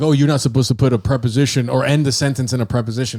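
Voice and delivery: ordinary talk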